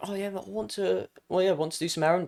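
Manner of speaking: soft, nervous, stumbling and halting tone. Demonstrating the wrong way to ask someone, in a nervous tone. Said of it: "not in that nervous tone".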